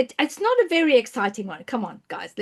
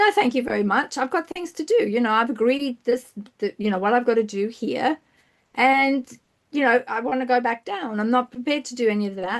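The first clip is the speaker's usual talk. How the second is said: ordinary delivery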